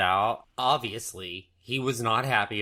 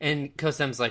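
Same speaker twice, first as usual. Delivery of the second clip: ordinary delivery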